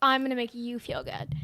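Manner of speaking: ordinary talk, nothing marked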